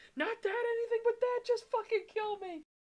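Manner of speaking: put-on very high, loud, babyish bawling scream. Retelling how a character begs to be killed instead: imitating screaming and bawling like a baby. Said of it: "He starts screaming and bawling like a little baby".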